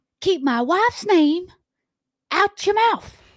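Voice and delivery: put-on very high, squeaky celebrity impression. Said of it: "Do the impersonation again".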